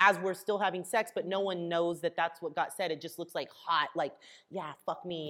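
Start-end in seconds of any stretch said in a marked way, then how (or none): 4.5-5.3 hushed half-whisper, barely above breath. Retelling what the half-whisper seems to say on camera: imitating a half-whisper.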